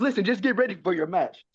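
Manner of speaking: put-on barked in a high Irish accent. Retelling what Jay told a wrestler before a match: imitating Jay's Irish accent. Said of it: "he has that Irish accent".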